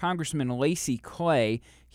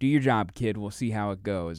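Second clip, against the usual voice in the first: ordinary talk, nothing marked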